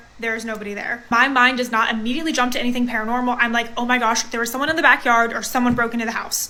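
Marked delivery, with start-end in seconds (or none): none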